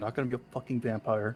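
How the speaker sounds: hushed. Game master voicing a character who glances back at the doors, lowered voice. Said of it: "lowers her voice again".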